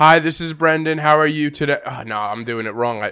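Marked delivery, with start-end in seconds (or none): 0.0-1.8 flat, mechanical, robot-like monotone. Demonstrating how he greeted people when he called them, robotic monotone. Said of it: "You already sound like a robot".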